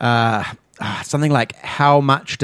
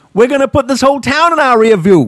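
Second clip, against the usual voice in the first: clumsy, bad Boston accent, very high and loud; 11 semitones higher, 7 dB louder than usual. Speaker quoting a line from a heist movie he watched, bad boston accent. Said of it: "I can't do a Boston accent".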